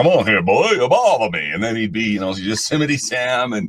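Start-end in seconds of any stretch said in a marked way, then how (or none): 0.0-1.5 cartoon rooster voice, higher and louder. Explaining that Mel Blanc voiced every character, doing a Foghorn Leghorn voice. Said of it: "Foghorn Leghorn go".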